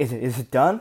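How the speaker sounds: frightened, halting, stammering voice. Retelling someone's reaction at the end: imitating someone scared. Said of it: "He was so, like, scared".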